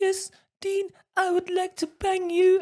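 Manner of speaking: very high-pitched mother voice. Act out him pretending to be your mate's mum answering Dean, imitating a mate's mum's voice. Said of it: "he'd actually do the voice of my mate's mum".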